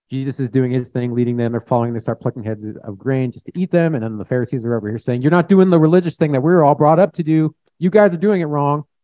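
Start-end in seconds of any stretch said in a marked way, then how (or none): 5.2-8.8 rough, aggressive, high and loud scolding tone. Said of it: "rough, was very aggressive".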